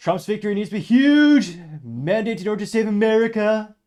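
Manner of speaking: booming, high, belted voice with hugely stretched words. Reading a comment aloud while attempting a Trump accent. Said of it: "I'll attempt, uh, his accent".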